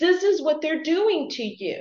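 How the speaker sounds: high-pitched, loud, pleading exclamation.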